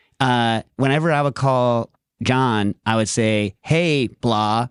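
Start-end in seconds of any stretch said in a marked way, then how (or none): none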